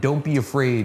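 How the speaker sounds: normal talking voice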